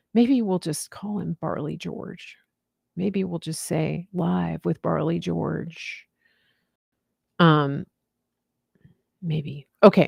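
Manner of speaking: whispered speech. Speaking on a show, whispering. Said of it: "I'm whispering".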